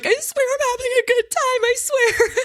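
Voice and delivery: very high, tearful, sobbing, insistent. Recalling crying in front of two friends, imitating own sobbing. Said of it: "as I'm sobbing".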